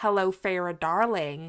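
terrible, clumsy put-on American accent. Asking someone how they hear a book line in their head, in terrible american accent. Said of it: "my terrible American accent there".

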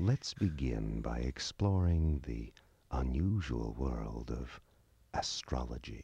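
low, sensual voice. A video game voice addresses the player, sensual voice. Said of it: "Now it's sensual".

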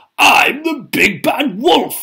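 howling, boastful, very high and very loud. Narrator voicing the big bad wolf in the pigs story: howled. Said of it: "he howled".

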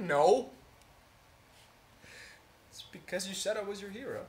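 crying while talking. Answering a friend who asks why they are crying: crying while talking. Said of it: "what are you crying about?".

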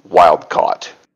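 dry, flat, low, unbothered deadpan. Narrating the messenger's reply to a question, flat. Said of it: "The messenger responds flatly".

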